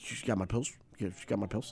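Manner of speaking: very hushed, quiet, meek pleading tone. A speaker retells what a man said to him, imitating a meek voice. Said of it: "very meek".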